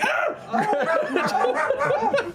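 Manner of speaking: very high, laughing yelp of pain. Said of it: "and you're like".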